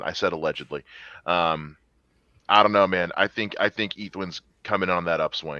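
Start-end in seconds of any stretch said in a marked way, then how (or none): none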